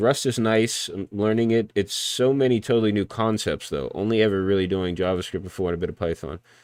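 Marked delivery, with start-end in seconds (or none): none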